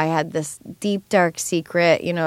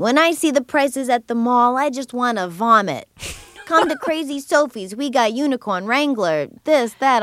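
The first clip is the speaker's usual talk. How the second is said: put-on thick Boston accent, pitched up, rapid salesman-like patter; 7 semitones higher than usual. Speaker imitates Crazy Donald, Crazy Sophie's husband, pitching his jeans store: thick Boston accent. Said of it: "he's got this really thick Boston accent".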